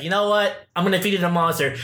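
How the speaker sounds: usual speaking voice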